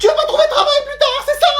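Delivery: mock outraged, very high, scolding cry.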